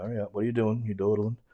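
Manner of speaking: ordinary delivery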